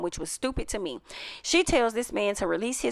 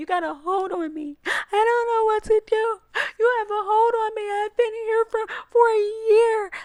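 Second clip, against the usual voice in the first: very high, slow, tearful, put-on whimpering whine; 13 semitones higher than usual. Retelling how a woman on a show sounded to a man: imitating someone whining. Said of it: "it sounds like she was whining".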